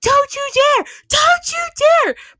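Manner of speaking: shrill, very high screaming voice. Retelling what she screamed when Mike picked her up to take her outside, retelling her screaming. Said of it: "she just starts screaming".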